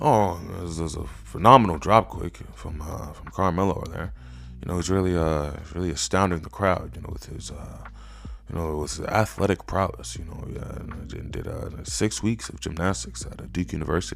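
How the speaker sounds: mock half-asleep, whispered, hushed, droning mumble. Mocking a wrestling commentator who sounds like he's sleeping: imitating a sleepy-sounding commentator. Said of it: "why does he sound like he's sleeping?".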